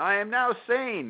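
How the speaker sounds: high, slow, drawn-out scream.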